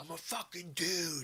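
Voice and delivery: high-pitched, mild mock yell. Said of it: "and I yelled at 'em".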